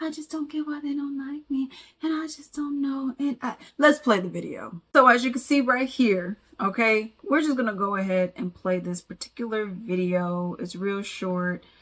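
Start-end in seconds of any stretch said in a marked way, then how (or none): 0.0-3.2 soft, high, breathy voice. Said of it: "I know why I'm sounding like [name]".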